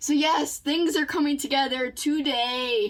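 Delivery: eager, high, pumped-up excited delivery, today stretched. Speaker addressing viewers before showing the room, excited yelling. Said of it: "Sorry I'm yelling and stuff".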